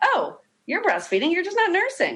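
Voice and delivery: mock self-assured, confident, very high sing-song voice. Retelling what an aunt who is a nurse said: imitating the aunt speaking confidently. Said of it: "she goes very confidently".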